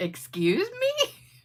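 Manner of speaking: mock irritated, annoyed tone, pitched very high. Telling a joke, voicing the narrator's annoyed reply to a stranger. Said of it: "Annoyed, I said".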